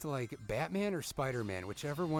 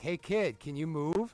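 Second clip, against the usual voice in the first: put-on polite tone, higher; 4 semitones higher, 3 dB louder than usual. Retelling asking a kid on a ladder to move: imitating own polite request. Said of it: "after I'm trying to be, like, nice and polite".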